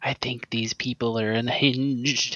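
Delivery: hushed, whispered aside. A character whispers an aside into their pocket, whispering. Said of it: "And then I whisper into my pocket".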